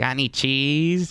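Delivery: sudden, abrupt, blurted delivery. Imitating how Steve Urkel bursts in: Steve Urkel voice. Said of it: "the same way that Steve Urkel would burst in and be like".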